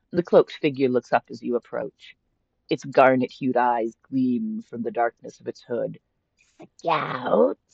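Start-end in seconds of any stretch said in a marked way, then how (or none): 6.7-7.5 hopeful, rasping voice. Reading a game's text aloud, a cloaked trader asks: rasping hopefully. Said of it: "it rasps hopefully".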